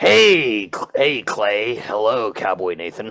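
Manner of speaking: alien boss monster character voice. Voicing a boss who walks into the break room: xenomorph boss voice. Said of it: "and he's like".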